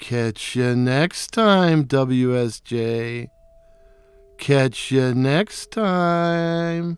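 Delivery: soft, snide, snarky, insulting taunt. Retelling what a nemesis owl said from a fir tree, mimicking a snarky, insulting voice. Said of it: "She said in her snarking, snarky, snarking and snarky, insulting voice".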